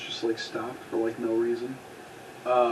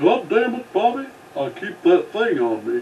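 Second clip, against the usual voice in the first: loud, high-pitched, drawn-out cartoon-dad drawl; 7 semitones higher, 7 dB louder than usual. Joining in after another speaker says he does the voice, Hank Hill voice. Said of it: "i do the hank hill voice".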